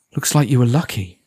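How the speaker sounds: ordinary delivery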